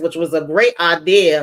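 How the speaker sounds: ordinary talk, nothing marked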